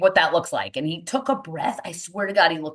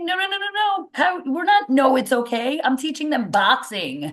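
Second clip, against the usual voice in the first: hollering, raised and pitched-up yelling; 8 semitones higher than usual. Retelling a man yelling at the parents, imitating someone yelling. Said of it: "He's like yelling at the parents".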